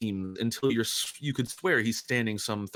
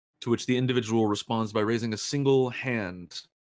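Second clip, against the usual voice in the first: plain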